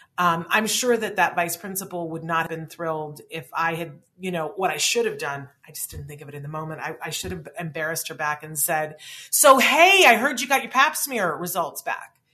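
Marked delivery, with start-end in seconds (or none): 9.3-12.1 very loud, high-pitched shouted yell. Imagining what she should have yelled through the gate at the vice principal, retelling a yell. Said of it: "just yelled it through the gate".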